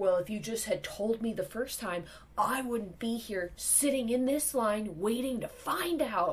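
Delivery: berating, scolding yell. Retelling a man in line berating an employee, imitating his yelling. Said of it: "continues to yell".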